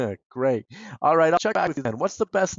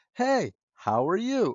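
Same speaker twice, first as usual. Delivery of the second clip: expressive, lively, varied intonation; 5 semitones higher than usual. Speaker shows listeners how a greeting sounds when read with inflection. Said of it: "It had inflection".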